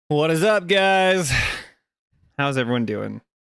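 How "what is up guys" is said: high, mild yell straight into the mic. Greeting everyone before getting started, screaming into the microphone. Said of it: "Sorry, I'm screaming into the microphone".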